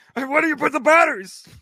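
very high, loud comic voice, cranked way up. Imitating Bobcat Goldthwait from Police Academy: Bobcat Goldthwait impression. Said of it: "Bobcat Goldthwait?".

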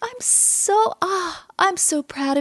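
high, very slow, sugary sweet voice. Retelling a coworker's customer service call: imitating Shelby's sweet phone voice. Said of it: "She's so sweet".

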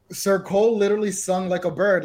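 plain

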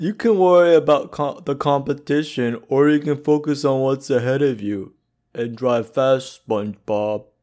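dopey cartoon starfish voice. Asked to repeat an ad line, speaker says it in a Patrick voice. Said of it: "now say it in a Patrick voice".

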